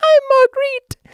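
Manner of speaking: awful, very high female falsetto voice. Retelling reading a book aloud as Marguerite: awful put-on female voice. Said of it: "this really awful female voice".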